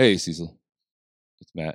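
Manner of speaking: casual, easygoing, relaxed tone. Acting out a phone call delivering bad news: imitating Matthew McConaughey. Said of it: "He's like".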